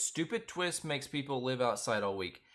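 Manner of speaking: normal talking voice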